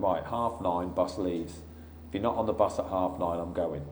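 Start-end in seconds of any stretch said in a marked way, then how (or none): none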